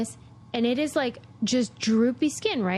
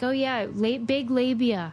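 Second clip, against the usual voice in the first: ordinary talk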